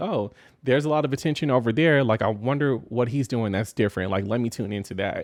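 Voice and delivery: ordinary talk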